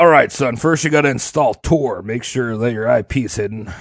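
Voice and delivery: low, soft, grumbling fatherly voice. Speaker imitates their dad helping with computer problems; low grumbling dad voice. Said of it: "He's got a low grumble".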